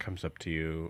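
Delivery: plain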